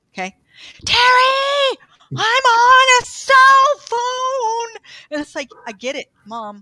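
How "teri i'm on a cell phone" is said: very high, very loud, slow, rising shouting. Speaker retelling her 81-year-old mom's call on her new cell phone, imitating her yelling. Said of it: "she's yelling".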